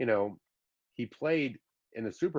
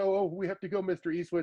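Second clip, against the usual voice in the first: put-on nervous, flustered tone, much higher; 8 semitones higher than usual. Recounting a friend running off from an invitation to hang out, imitating a nervous friend. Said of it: "You're all nervous".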